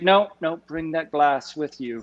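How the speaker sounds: put-on thick, laid-on Scottish accent. Retelling what Mike said at the still: imitating Mike's thick Scottish accent. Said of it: "in his thick Scottish accent".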